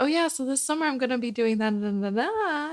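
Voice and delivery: casual, breezy bragging tone, trailing "da-da-da". Retelling dropping summer plans into interviews: imitating herself bragging. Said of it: "a little flex on them".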